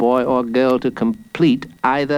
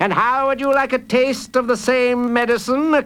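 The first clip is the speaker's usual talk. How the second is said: high, triumphant crowing cry; 11 semitones higher than usual. Mr. Fox, about to fire at O'Toole, cries out triumphantly. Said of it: "Cried Mr. Fox triumphantly".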